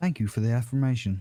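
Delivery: robotic, digital voice-assistant tone. Imitating the other speaker who sounds like Siri: imitating Siri-like voice. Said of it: "Sound like Siri".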